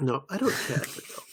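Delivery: put-on whispered, breathy, hushed British accent. Discussing a character, the speaker voices her line in a British accent. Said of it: "I don't know why I said that in a British accent".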